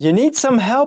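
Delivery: mock, very high yell, called out as if from afar. Retelling a boogie boarder's reply: imitating someone yelling. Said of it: "he yelled back".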